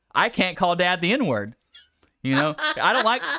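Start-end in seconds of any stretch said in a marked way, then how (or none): 0.2-1.6 put-on kid speaking loudly. Retelling a kid's line in the noodle place: imitating a kid saying it loudly. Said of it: "And real loud, he goes".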